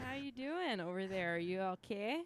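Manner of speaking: put-on easy-going voice with a Canadian accent. Imitating a character calling out to the enemy on Imperial channels, Canadian accent. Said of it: "Canadian now".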